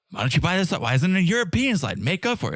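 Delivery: frantic, agitated rant. Retelling a drunk guest's complaint about the slide: imitating someone freaking out. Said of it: "he freaks out".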